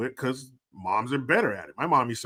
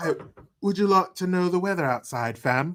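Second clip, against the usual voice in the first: put-on British accent, voice-assistant style, higher pitch; 6 semitones higher than usual. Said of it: "not a British Alexa".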